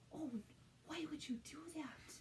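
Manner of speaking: mildly overdramatic, theatrical, soft and high. Showing how they respond when someone takes another's Play-Doh, mildly overdramatic. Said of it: "I do over dramatize some things".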